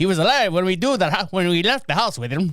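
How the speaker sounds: put-on failed, half-managed Irish accent. Reading out a quote from a newspaper report in a bad Irish accent. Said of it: "I can't do an Irish accent".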